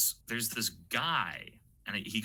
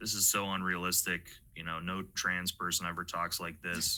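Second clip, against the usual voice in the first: ordinary delivery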